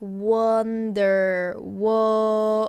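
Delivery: slow, careful pronunciation. Teaching a Korean vowel sound, demonstrating the word said slowly. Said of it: "say it slowly".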